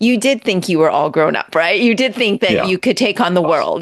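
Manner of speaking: ordinary talk, nothing marked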